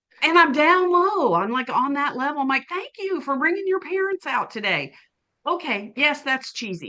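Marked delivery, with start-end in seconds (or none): 2.7-4.9 put-on high, squeaky childlike voice. Retelling what the speaker says to children at events, in a high squeaky voice. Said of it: "talking in my high squeaky voice that I only use for children and pets".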